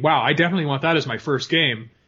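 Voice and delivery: ordinary delivery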